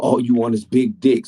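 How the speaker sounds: yelled out as an acted-out scream. Retelling what the other speaker screamed in a voice recording: imitating someone screaming. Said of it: "in the voice recording screaming".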